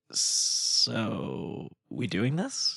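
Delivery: speaking softly. Retelling everyone huddled around a glowing screen, asking whether to continue: soft voice. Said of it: "in a soft voice".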